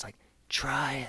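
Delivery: put-on whispery man's voice. Speaker recalls a man's chilling line, imitating his whispery voice. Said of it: "the way he said it with that whispery voice".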